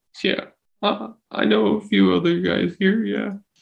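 high, tearful blubbering, talking through sobs. A prison inmate, asked about other friends in the prison, answers while crying. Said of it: "He starts crying".

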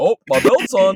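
high, loud, mock-innocent oblivious voice.

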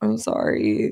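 play-acted, very low, tearful crying voice. Speaker retells being on the phone with insurance, retelling crying on the phone. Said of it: "I'm just like crying on the phone".

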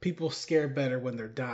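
ordinary talk, nothing marked

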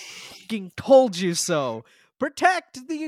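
screaming. Voicing a rabbit who warned of the zombies at the gate: screaming orders. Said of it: "as he screams orders".

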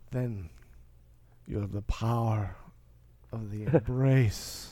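very low, deep film-character voice. Doing Jon Voight from Anaconda when asked: Jon Voight impression. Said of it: "That is such a dead-on impression".

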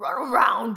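very loud, booming talking husky dog voice. Speaker describing a talking-dogs video, husky dog voice. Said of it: "a husky goes".

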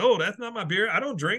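high indignant voice.

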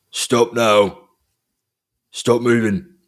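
loud, gruff, harsh voice. A voice calls out from the thicket to the approaching group, gruff voice. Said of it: "you hear a gruff voice".

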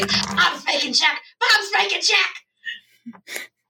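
whispering very loudly. Voicing a character who starts walking around, in a loud whisper. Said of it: "starts whispering very loudly".

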